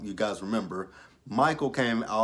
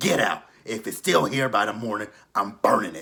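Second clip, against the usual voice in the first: put-on raspy smoker's voice; 4 dB louder than usual. Retelling what Angela said about getting rid of it: Angela voice. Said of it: "doing the motherfucking Angela voice".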